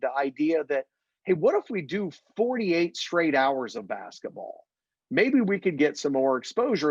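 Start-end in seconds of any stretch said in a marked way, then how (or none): none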